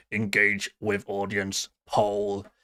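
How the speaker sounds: low, flat, robotic monotone reading voice. Speaker reads the chat's menu options aloud, in a robotic monotone. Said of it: "I sound like a robot there".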